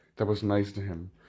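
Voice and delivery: ordinary talk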